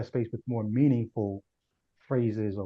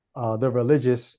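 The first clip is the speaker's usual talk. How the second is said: plain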